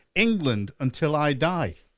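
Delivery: ordinary talk, nothing marked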